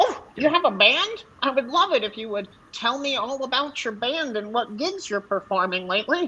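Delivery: friendly, keen, eager goblin voice. A goblin asks a traveler about his band: goblin voice. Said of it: "you can see in the distance there is a goblin who is just making his little way with a pack on his / you can see in the distance there is a goblin who is just making his little way with a pack on his".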